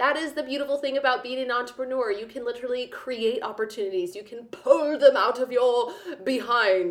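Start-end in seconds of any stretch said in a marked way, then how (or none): 4.1-6.9 slow, grand, theatrical stage-actor declamation. Talking about being an entrepreneur: very Shakespearean voice. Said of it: "I said in a very Shakespearean voice".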